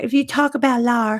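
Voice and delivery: imitated slight Texas accent. Retelling what she told a chatter, imitating a slight Texas accent. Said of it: "she has a little Texas, you know, accent".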